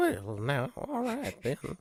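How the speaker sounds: high, swooping, sing-song western sidekick voice. Answering another speaker in a bit: Chester from Gunsmoke voice. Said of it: "sounds more like your, like Chester from".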